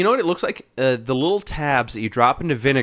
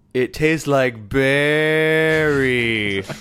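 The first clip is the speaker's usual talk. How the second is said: mock-slurred speech. Recalling what they said to their mom after the tab, retelling slurred words. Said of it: "I slurred out".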